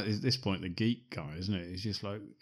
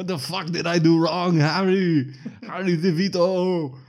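put-on ridiculous action-hero accent, shrill, loud, booming, drawn-out shout; 9 semitones higher, 11 dB louder than usual. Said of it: "he shouts out in this is ridiculous 'cause of his accent".

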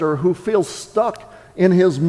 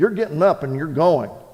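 put-on, no-nonsense, stern, firm motherly tone; 3 semitones lower than usual. Telling a joke, the speaker voices a mother answering her reluctant son, retelling a stern mother. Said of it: "the mother more sternly said".

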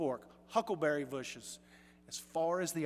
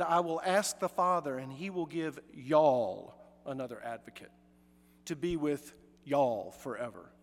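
Southern American English accent with drawn-out y'all. Quoting the promise of the father in a southern american accent. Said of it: "I'm going to have to say it in Southern English".

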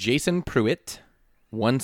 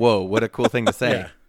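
normal talking voice

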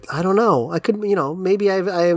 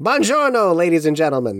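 put-on carnival barker voice. Talking about an old italian company, speaker slips into a carnival barker voice. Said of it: "A carnival barker".

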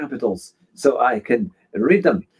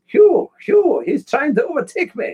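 put-on high-pitched French accent, shouted, called out; 13 semitones higher than usual. Retelling a racing game overtake, imitating Thea's French accent, high shout. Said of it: "a French woman shouting my name at a high voice".

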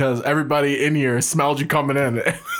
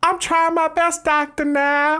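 very high, slow, drawn-out weird voice; 14 semitones higher than usual. Imitate a woman on a show talking to her doctor, in a weird put-on voice. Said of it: "in this weird voice".

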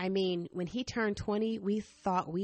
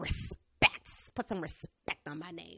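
voice sounding just like a grandmother; 4 dB quieter than usual. Speaker keeps repeating the word respect and slips into imitating a grandmother. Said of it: "I sound like my grandmother".

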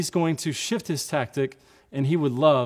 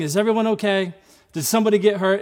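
put-on children's yell, high and raised; 6 semitones higher, 5 dB louder than usual. Retelling a car crash, the speaker quotes the kids from the back seat; imitating kids yelling. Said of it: "They're yelling".

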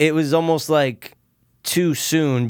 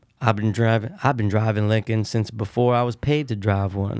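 low, dropped, car-advert announcer voice; 6 semitones lower, 4 dB quieter than usual. Quoting a car commercial line: Matthew McConaughey impression. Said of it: "your best Matthew McConaughey impression".

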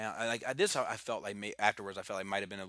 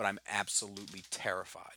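ordinary delivery

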